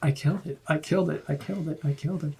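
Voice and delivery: quiet, repeated mumbling under the breath. Player voices their character talking to themself: muttering under breath. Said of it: "I am muttering to myself under my breath".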